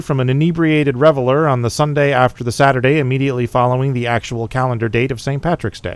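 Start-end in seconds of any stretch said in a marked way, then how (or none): none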